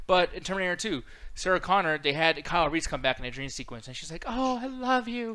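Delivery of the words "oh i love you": high, put-on crying moan. Mocking a Terminator 2 dream scene, imitating Sarah Connor moaning. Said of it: "she's like kind of like moaning almost".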